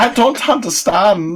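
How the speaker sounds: put-on German accent. Playing a character: put-on German accent. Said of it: "that's my German accent".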